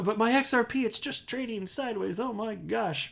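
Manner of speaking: put-on high, whiny little-child voice. Mocking impatient investors who complain about their coin: mock whiny child voice. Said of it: "it sounds like a whiny little child".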